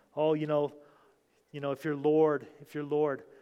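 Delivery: ordinary delivery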